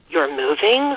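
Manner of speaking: gasped, gasping delivery. Narrator reads a girl's reply on hearing another girl will move: gasping. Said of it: "Laura gasped".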